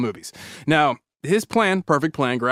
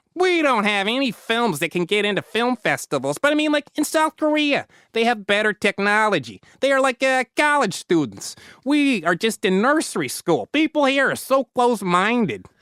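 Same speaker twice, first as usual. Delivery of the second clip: comical put-on Chicago accent, higher; 8 semitones higher than usual. Reading a leader's quotes from a secret tape: Kim Jong-il in comical Chicago accent. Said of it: "gave the dear leader a comical Chicago accent".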